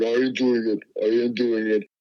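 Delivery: put-on Birmingham accent, repeated refrain said twice. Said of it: "his, uh, Birmingham accent would, would be kinda like".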